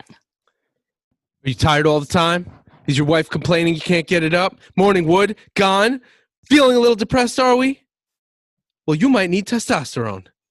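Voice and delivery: aggressive, loud, angry, rising rant. Performing a spoken pitch while another speaker listens, in an angry voice. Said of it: "you sound like you have too much testosterone and you're angry".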